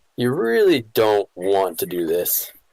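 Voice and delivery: whispering low. A storyteller voices a man who steps close to the group: low whisper. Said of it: "he whispers in a low voice".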